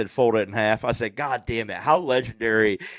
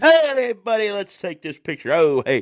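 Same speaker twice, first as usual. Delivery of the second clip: sudden buddy-buddy friendly charm, pitched up; 9 semitones higher, 4 dB louder than usual. Retelling a meeting where a wrestler suddenly turned friendly: imitating Honky Tonk Man turning on the charm. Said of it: "he turned it on immediately".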